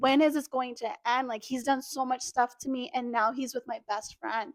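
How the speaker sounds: ordinary talk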